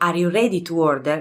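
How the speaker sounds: usual speaking voice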